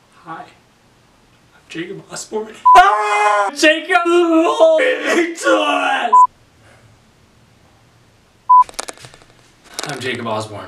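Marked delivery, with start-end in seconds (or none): 0.3-6.2 very high, unhinged, frantic, loud, swooping outburst. Slating for an audition for the grieving tourist: losing it. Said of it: "You okay, dude?".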